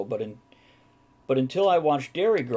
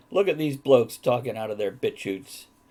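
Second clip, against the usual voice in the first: ordinary delivery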